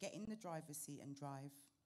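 ordinary delivery

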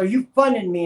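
acted, very loud, high-pitched angry outburst. Retelling an old man repeating his question; acting out someone mad. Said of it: "he was all mad".

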